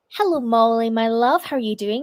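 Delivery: plain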